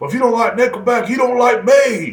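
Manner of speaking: play-acted high-pitched, shrill, yelled screaming rant. Retelling how a man screamed at the speaker, imitating a man screaming. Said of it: "And he would scream that".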